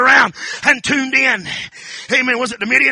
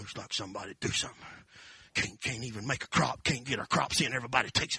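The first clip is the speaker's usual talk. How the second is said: put-on mutter, much lower and quieter; 13 semitones lower, 18 dB quieter than usual. Speaker retelling the story imagines Gideon threshing wheat, Gideon mumbling under breath. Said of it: "he's mumbling under his breath with fire in his eyes".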